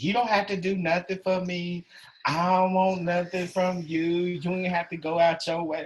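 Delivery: put-on lippy, mouthy, sassy tone with attitude. Retelling her reply to his offer of chicken: imitating her talking back with attitude. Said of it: "this lady flipped her lip".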